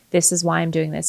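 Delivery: ordinary talk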